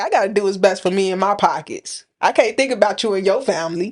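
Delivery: ordinary talk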